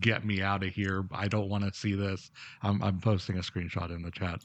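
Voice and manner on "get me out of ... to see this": put-on pleading tone, quieter. Retelling a game character's line from a scene: imitating a plea.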